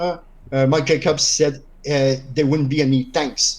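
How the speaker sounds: ordinary delivery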